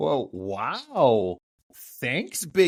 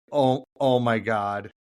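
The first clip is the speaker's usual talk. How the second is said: mock deflated, dejected robot voice; 3 semitones lower than usual. Retelling the robot slumping after learning its purpose: imitating a deflated robot. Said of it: "slunks down and is like".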